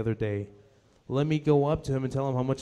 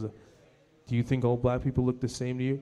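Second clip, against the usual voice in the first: condescending, patronising, talking-down tone; 3 dB quieter than usual. Retelling what a man said back to him: imitating a condescending tone. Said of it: "It was very condescending".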